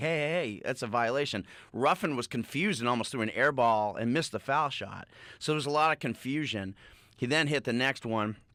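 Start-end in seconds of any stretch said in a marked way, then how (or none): none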